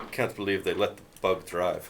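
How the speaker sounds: low, fast, grumbled mutter under the breath. As you go by, Mr. Petrov mutters under his breath. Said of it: "mutter under his breath".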